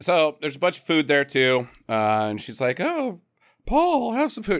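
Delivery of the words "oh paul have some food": very high, put-on, refined ladylike voice. Retelling what Roberta said to Paul: imitating Roberta, lady impression. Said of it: "sounds just like my lady impression".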